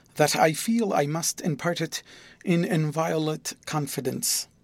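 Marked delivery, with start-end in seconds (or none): none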